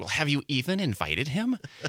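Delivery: mock snotty know-it-all voice, swooping student tone. A teacher retelling a student's question from the back of class, imitating Crystal's snotty voice. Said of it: "in a snotty voice said".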